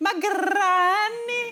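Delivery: very high, trilled R, granny drawn out. Retelling a line said at age six after being told to roll the R. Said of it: "I was told to roll the R".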